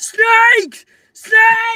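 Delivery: very loud, shrill, high-pitched battle yell. A player voicing a character who yells out as loud as he can, yelling. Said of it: "You can hear [name] yelling".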